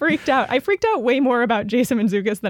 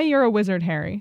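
usual speaking voice

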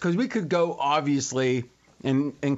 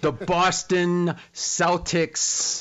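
put-on enunciation of every word, higher; 4 semitones higher than usual. A host mimics how RJ delivered his recap, imitating RJ over-enunciating. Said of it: "He's enunciating every word".

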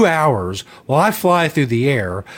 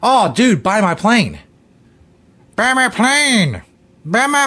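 mock old woman voice, higher, slower; 5 semitones higher than usual. Retelling how the seller urged the speaker to buy his plane, Madea impression. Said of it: "That's my Madea impression".

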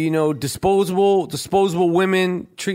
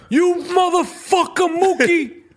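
very high-pitched, film-style delivery; 13 semitones higher than usual. Quoting the movie line again, Danny Aiello impression. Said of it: "That's a pretty good impression".

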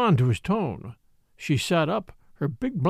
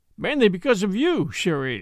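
plain

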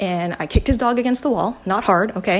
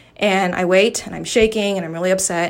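ordinary talk, nothing marked

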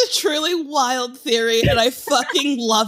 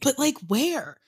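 secretive, hushed half-whisper; 5 dB quieter than usual. Asking another speaker how they dated around, half-whispering. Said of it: "I'm whispering like someone's listening".

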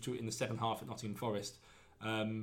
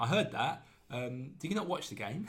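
plain

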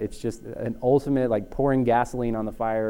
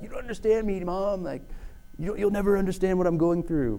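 put-on angsty teen voice, much higher; 9 semitones higher than usual. Joking about kids, the speaker acts out a teenager talking to mom: put-on angsty teen voice. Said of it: "That was my best teen voice".

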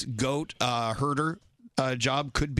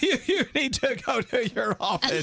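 clearly enunciated while laughing; 9 semitones higher than usual. Imitating a man who enunciates words while laughing: spoken while laughing. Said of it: "He speaks words and he enunciates while he's laughing. He's like".

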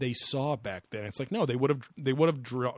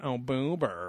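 put-on flamboyant entertainer voice. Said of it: "imitate him going".

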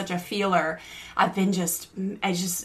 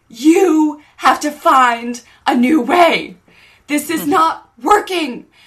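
screaming, higher and louder; 8 semitones higher, 11 dB louder than usual. Retelling a man screaming at a younger man: imitating someone screaming. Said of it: "starts to scream at him".

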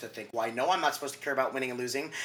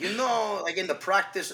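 bad, fake, pitched-up Brazilian accent; 6 semitones higher, 3 dB louder than usual. Quoting a man he once interviewed, in a terrible Brazilian accent. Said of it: "Terrible Brazilian accent".

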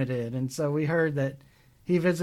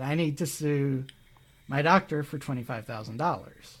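normal talking voice

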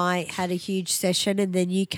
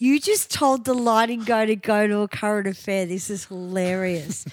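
ordinary talk

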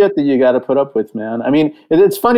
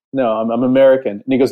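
normal talking voice

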